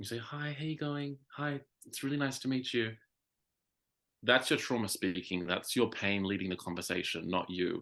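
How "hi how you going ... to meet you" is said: small, timid, shrinking voice, pitched up. Showing how someone who shrinks on walking into a room greets people: shrinking voice. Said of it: "every time you walk into a room and you shrink".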